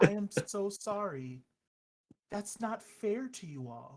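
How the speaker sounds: play-acted, very genuine, heartfelt, sincere, slow. Voicing a character who apologizes to the group: very genuine voice, lowered. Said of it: "in a very genuine voice, she kinda, like, her voice lowers".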